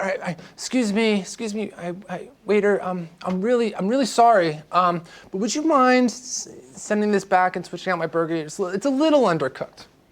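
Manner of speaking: weak, hesitant, timid, stumbling, passive voice. Speaker demonstrates asking a waiter to send back an undercooked burger, passive and weak. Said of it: "It's being passive".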